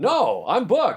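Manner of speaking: high-pitched, slow, incredulous tone.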